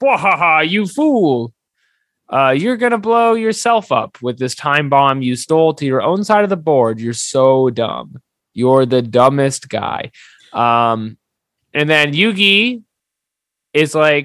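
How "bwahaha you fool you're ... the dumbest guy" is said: gloating villain voice, taunting, laughing. Retelling a card duel, imitating a villain laughing mockingly. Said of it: "he's like, laughing".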